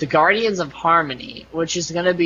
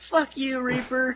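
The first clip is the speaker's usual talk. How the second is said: pitched-up hollering yell; 9 semitones higher, 7 dB quieter than usual. Retelling what a guy in a video yelled: imitating someone yelling. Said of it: "he's yelling".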